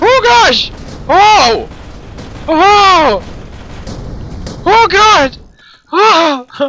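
frightened, startled cries drawn out very slowly. Streamer playing a game gets suddenly frightened, startled scared yelps. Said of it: "that scared the crap out of me!".

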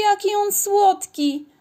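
very high-pitched, enchanted, delighted gush. Angelika's friends see her new hamster for the first time, delighted. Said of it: "Zachwyciły się koleżanki".

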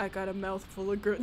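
very low, quiet, flat deadpan. Describing someone saying this to them, imitating a deadpan delivery.

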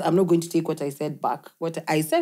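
ordinary talk, nothing marked

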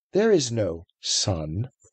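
grave, deliberate, slow and low voice. The witch repeats herself to the four listeners, slow and grave. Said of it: "Slowly and gravely, the witch repeated".

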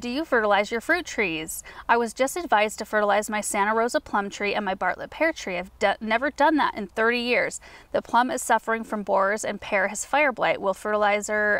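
normal talking voice

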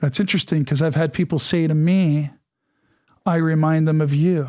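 ordinary delivery

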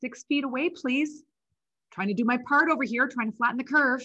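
put-on fake worry, feigned fear. Acting out pretending to fear a partner: pretending to fear an asymptomatic partner. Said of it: "I can just pretend that I'm afraid".

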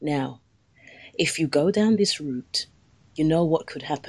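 placating, motherly, gentle, conciliatory tone. Showing the voice needed to press home a point, in a conciliatory tone. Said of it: "It was conciliary".

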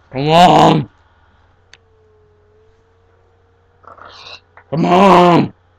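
very loud, shrill, swooping screaming yell. Gamer urging a teammate on while playing Minecraft, screaming. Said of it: "Stop screaming at me".

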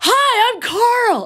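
very high, loud, shrill, full-blast energetic voice. Imitating the Parks and Rec character Carl, the animal control person: loud Carl voice. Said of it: "it's about to get loud".

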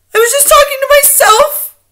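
very high, frightened, fearful outcry. Narrator reads a frightened witch answering her superior, crying out in fear. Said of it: "cried the wretched witch".

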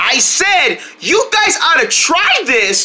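high carrying shout. Repeating a line from up high after being told to say it louder: shouting louder. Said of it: "You should have said it louder".

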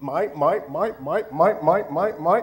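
repeated animated seagull character voice. Recalling the seagulls from Finding Nemo for the audience: Finding Nemo seagull voice. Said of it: "you remember the seagulls?".

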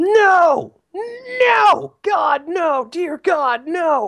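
very high, very slow, shrill, drawn-out wailing screams. Telling about a woman in a restaurant line, imitating someone screaming. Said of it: "she starts screaming".

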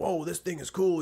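put-on old trucker voice. Retelling what old truck guys say on seeing the truck: stereotypical old truck guy voice. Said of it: "they got the stereotypical old truck guy voice".

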